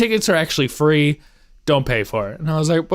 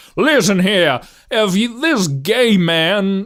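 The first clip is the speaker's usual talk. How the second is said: put-on Southern voice, higher; 4 semitones higher than usual. Retelling a role played in a stage play: imitating a bigoted Southern lawyer. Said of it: "I played a bigoted Southern lawyer".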